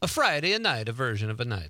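put-on Italian accent, extra vowels tacked onto words. Opening a show, repeating the greeting in a put-on Italian accent. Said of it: "I almost morphed into an Italian accent".

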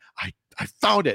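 sarcastic, mock triumphant tone.

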